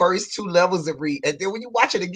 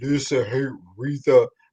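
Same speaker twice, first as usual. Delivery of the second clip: put-on deep, hushed, soft voice; 7 semitones lower, 5 dB quieter than usual. Recalling how Dion always came in, in Dion's deep voice. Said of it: "Dion would always come in with the deep voice like".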